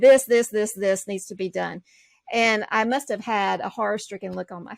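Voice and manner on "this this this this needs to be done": imitated firm tone. Retelling a mentor's words to another student: imitating a firm tone.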